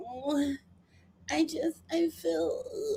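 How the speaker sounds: put-on very slow, drawn-out, high baby-talk voice. Mocking someone's whining over a scam: imitating a baby voice. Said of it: "whole baby voice".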